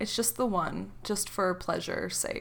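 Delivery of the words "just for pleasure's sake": ordinary talk, nothing marked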